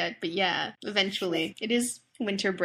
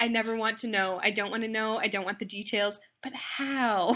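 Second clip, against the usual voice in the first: ordinary talk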